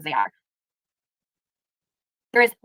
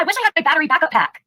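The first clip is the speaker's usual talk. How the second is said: high-pitched, excited, mocking put-on voice. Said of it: "Why do you sound so excited?".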